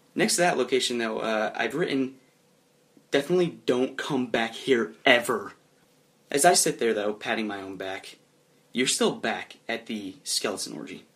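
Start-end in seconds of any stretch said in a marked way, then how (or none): none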